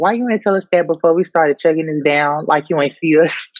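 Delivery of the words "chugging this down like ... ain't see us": normal talking voice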